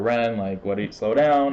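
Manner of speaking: ordinary talk, nothing marked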